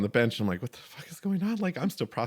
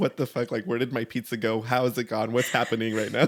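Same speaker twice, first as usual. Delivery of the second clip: plain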